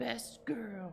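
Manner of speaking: odd, high, put-on creature voice. Voicing the creature Skink after she is stabbed: creature character voice. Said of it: "and she goes".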